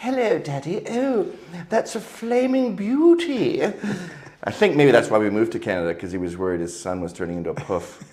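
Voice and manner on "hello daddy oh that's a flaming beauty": put-on very high, slow, plummy posh young child voice. Retelling how they sounded at five in a posh town: imitating own posh childhood voice. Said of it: "It's very posh, and I sounded like".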